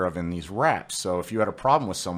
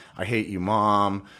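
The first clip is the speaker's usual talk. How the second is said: ordinary talk, nothing marked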